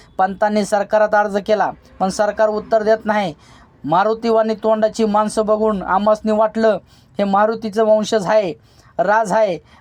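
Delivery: ordinary delivery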